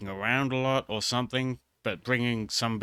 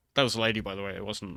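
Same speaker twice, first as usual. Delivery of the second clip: ordinary talk, nothing marked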